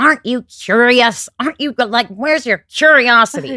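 booming, very loud yell. Retelling what an acting teacher would say: imitating Tony Greco shouting. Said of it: "he shouts at me a lot".

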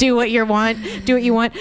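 ordinary delivery

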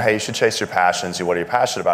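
ordinary delivery

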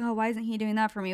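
ordinary talk

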